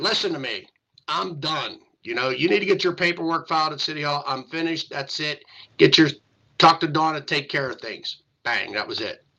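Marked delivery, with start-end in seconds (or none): 0.0-8.2 mock stern, firm, no-nonsense voice. Retelling a phone call from Hutch announcing he is done: imitating a stern voice. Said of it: "a stern voice would say".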